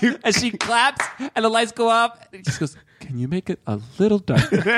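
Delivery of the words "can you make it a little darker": flat, dead-serious deadpan with no comedic tone. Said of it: "there's no comedic tone in his".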